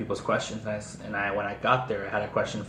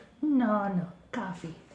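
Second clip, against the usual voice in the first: put-on very high-pitched old lady voice; 11 semitones higher than usual. Ordering at McDonald's in the Consuela old lady voice. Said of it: "confident to do the full voice".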